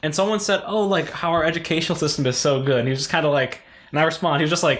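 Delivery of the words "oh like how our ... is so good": ordinary talk, nothing marked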